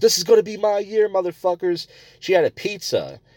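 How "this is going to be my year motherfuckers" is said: high-pitched, loud yelling. Speaker retells a girl on the train yelling at people, imitating a girl yelling. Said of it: "she's yelling at people".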